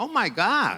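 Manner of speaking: poor imitation of Alabama accent. Quoting an older lady's reaction to her, in a bad American accent. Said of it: "my terrible American accent".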